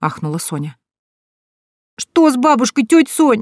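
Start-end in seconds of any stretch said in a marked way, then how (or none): 2.0-3.4 put-on high-pitched, frightened little boy's pleading voice. Nikita asks Aunt Sonya on the phone about his grandmother, frightened. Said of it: "В голосе мальчика слышался страх".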